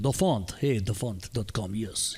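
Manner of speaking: failed attempt at a put-on Italian accent. Presenter showing a font website, italian accent attempt. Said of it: "try say it with an Italian accent".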